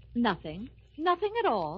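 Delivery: resentful, sore, annoyed, put-out tone. Answering a colleague who asks what's wrong: sore, annoyed tone. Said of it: "I know that tone of voice. You're sore about something".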